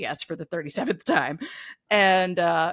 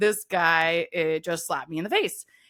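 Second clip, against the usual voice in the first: ordinary talk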